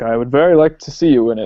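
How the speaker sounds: ordinary talk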